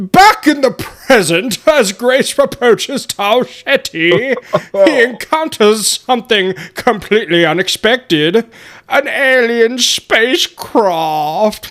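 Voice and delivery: put-on English accent in narrator style. Reading a story recap aloud after a listener asks for it, in a fake English accent. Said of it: "Should I do the English, like the fake English again?".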